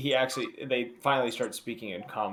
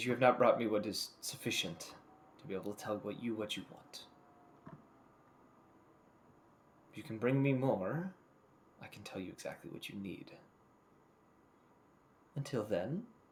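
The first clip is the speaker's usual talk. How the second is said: speaking as a dragon; 5 dB quieter than usual. Voicing a dragon answering a question in the game: voicing a dragon. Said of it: "he says, he just says".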